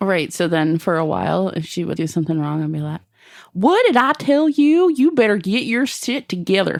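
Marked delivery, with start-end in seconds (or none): 3.5-6.8 put-on Southern accent, scolding, pitched-up holler. A parent acts out yelling at a child, in a put-on southern accent. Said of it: "if I did it in a southern accent".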